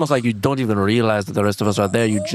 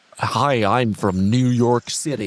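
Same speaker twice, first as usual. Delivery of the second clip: fake, put-on general American accent. Urging another speaker to try one, showing a put-on American accent. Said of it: "try and do an American accent".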